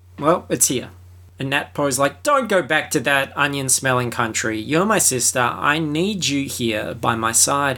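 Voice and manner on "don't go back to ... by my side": ordinary talk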